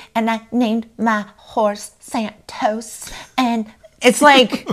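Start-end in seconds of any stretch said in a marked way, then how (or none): 0.1-3.1 slow, sugary, all-cute put-on sweet voice. Retelling how a woman talks when she tries to seem cute, imitating her cutesy voice. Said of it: "she talks like this and she tries to get like all cute".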